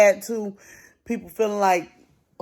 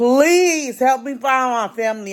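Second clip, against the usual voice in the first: put-on tearful, crying delivery, speaking through tears; 4 semitones higher than usual. Recalling how they begged for help finding their family: retelling a crying plea. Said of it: "I was crying".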